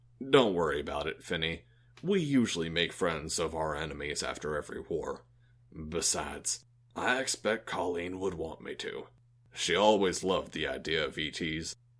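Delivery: low voice. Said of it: "He said".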